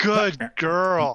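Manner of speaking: condescending, patronizing tone. Praising another character at the table: condescending tone. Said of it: "That's a little condescending".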